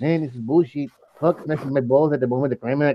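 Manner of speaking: put-on Spanish-accented delivery. Trying out the same line in different voices, the speaker switches to a Spanish accent. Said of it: "I should do my Spanish accent".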